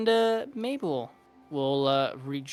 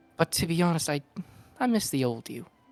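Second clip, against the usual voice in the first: whispering, slower. Voicing a woman who leans over to whisper in Bonelia's ear, whispering. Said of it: "she kind of like whispers to your ear".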